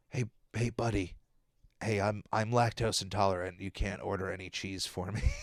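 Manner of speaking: low, hushed, confiding half-whisper. Acting out a character leaning over to his buddy: half-whispering. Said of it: "is he just whispering over to SpongeBob like".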